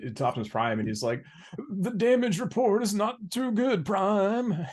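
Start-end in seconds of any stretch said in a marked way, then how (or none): 1.7-4.5 acted, trembling, very high and drawn-out voice. Retelling a scene where Mirage reports to Optimus Prime: shaky Mirage voice. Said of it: "comes up with this shaky voice".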